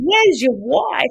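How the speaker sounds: put-on very high, broad ocker Australian accent. Retelling running up and shouting a question at a man, in a really broad bogan Aussie accent. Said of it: "In a really ochre, bogan Aussie accent".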